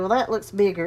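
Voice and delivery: ordinary talk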